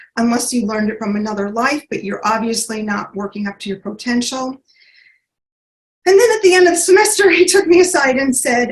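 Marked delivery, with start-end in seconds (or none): none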